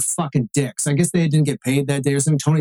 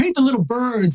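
put-on facetious, sarcastic voice, very high pitch; 9 semitones higher than usual. Retelling Tony's answer to his question onstage, imitating Tony's sarcasm. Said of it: "he started being really facetious and sarcastic".

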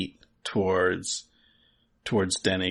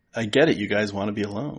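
ordinary talk, nothing marked

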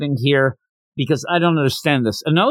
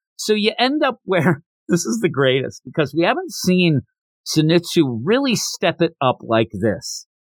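ordinary talk

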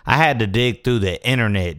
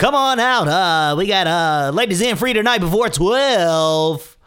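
radio announcer voice; 10 semitones higher than usual. Showing off voice acting, asking to be hired: radio voice. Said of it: "You want me to do radio voice?".

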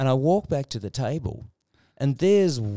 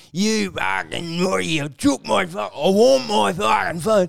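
put-on rough, pitched-up, drunken Australian man's rant; 6 semitones higher, 4 dB louder than usual. Telling about a drunken man who lost his phone; imitating a drunken Aussie bloke. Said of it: "this drunken Aussie bloke".

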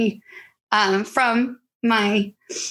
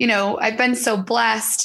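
plain

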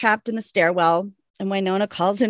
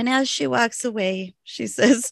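ordinary talk, nothing marked

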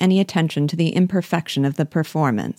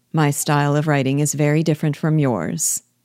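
ordinary delivery, nothing marked

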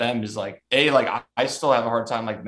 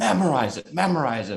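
high-pitched, half-voiced, jeering heckling call; 5 semitones higher than usual. Speaker recounts a man yelling at him during his set, retelling the yell. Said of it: "The guy started yelling at me like".

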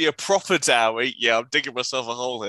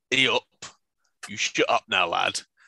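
threatening, intimidating tone; 5 semitones lower than usual. Stepping between two arguing characters, telling the elf off: intimidating. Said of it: "try and follow up with an intimidate roll".

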